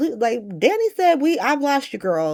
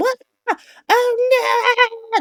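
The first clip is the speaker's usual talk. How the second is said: put-on very high alarmed shriek, "oh" drawn out; 12 semitones higher than usual. Describing sudden screams heard from down the halls, retelling a scream. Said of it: "halls of Bobby's just like screaming".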